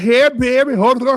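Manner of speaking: put-on Louisiana Creole accent.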